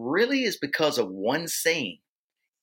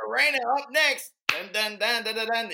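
high, hyped-up party DJ announcer voice. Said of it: "that guy, that D J".

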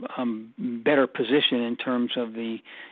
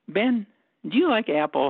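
mock very friendly, easygoing tone, high pitch; 9 semitones higher, 3 dB louder than usual. Retelling how a man would turn to him under the apple tree, mock very friendly tone. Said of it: "say in a very friendly tone".

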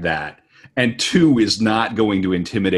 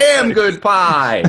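very high, pitched-up voice; 11 semitones higher, 4 dB louder than usual. Joking about old TV dramas, in a David Lynch voice. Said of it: "You gotta go into that David Lynch voice".

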